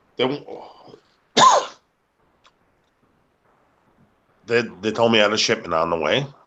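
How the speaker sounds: intoxicated speech. Recounting a phone call from UPS, drunk. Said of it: "I'm sorry, I'm drunk".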